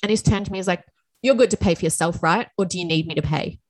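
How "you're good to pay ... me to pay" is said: rude manner, put on. Retelling what a lunch date asked about paying: imitating a rude tone. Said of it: "in that, that tone as well".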